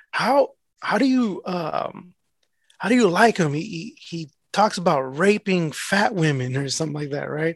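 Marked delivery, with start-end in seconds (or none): none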